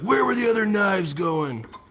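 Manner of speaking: very high, loud voice. Speaker riffs on a line from an old Batman movie: Batman impression. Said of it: "I won't do that anymore".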